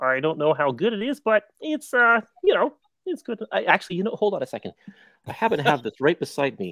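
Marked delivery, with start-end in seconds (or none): 0.0-3.4 put-on cartoon frog voice. Asked if they can do different voices, the speaker tries a Kermit the Frog voice. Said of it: "This is my Kermit voice".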